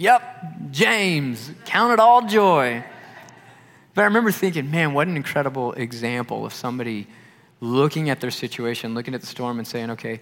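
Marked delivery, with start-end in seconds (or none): 0.0-2.8 put-on very slow, high, drawn-out Southern accent. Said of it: "he was real Southern".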